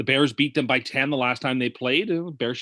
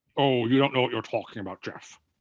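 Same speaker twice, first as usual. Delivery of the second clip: put-on, laid-on-thick Scottish accent. Teasing Geoff during a chat about impressions, in a Sean Connery impression. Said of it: "That was still Sean Connery".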